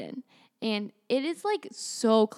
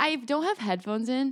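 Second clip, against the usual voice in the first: plain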